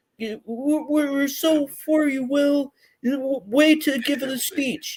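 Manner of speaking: mock tearful gushing. Mocking people who praised a speech by Will, imitating tearful gushing. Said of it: "started crying and going".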